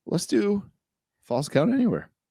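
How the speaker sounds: high voice breaking badly mid-line. Show host introducing the next segment, voice cracking. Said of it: "My voice just cracked real bad".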